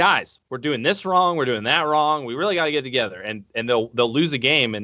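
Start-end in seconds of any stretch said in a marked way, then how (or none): none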